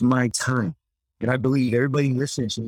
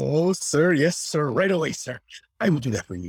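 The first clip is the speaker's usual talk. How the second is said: cheerful, eager, delighted and obliging tone; 3 semitones higher than usual. Retelling an audition line for a scolding boss: happy Esteban voice. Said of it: "I made a choice to make Esteban happy".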